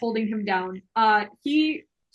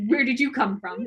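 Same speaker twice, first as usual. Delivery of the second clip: put-on impolite, rude tone. Voicing a character who questions a player's character: rude tone. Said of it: "Very rudely".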